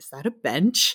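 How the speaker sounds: thoroughly fed-up, put-upon, offended, exasperated tone. Retelling a scene where Mando asks about a makeshift bench: imitating Mando's exasperated tone. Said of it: "in his perfect Mando tone".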